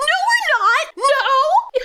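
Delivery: play-acted, very high, frantic, panicked screaming. Retelling how her best friend ran after him: retelling a panicked scream. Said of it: "she ran after him screaming".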